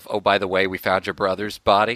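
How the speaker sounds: put-on flat, deadpan delivery. Discussing a story's plot, speaker quotes a line in mimicked deadpan delivery. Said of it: "deadpan delivery of".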